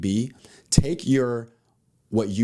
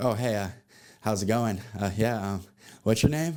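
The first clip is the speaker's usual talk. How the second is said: nervous, halting, hesitant fumbling. Acting out an unsure guy walking up to a girl, imitating a nervous guy. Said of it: "Like you're just nervous the whole time".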